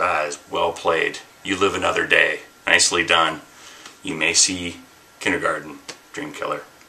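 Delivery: ordinary delivery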